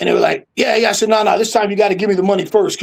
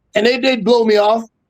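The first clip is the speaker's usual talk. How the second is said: usual speaking voice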